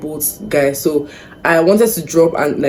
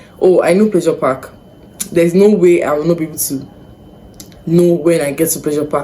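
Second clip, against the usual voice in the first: ordinary talk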